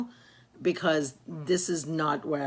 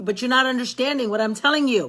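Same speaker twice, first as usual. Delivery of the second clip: raised, pitched-up yelling; 8 semitones higher, 7 dB louder than usual. A mother retells arguing with her son, re-enacting her own yelling. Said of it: "But Mom, why are you yelling?".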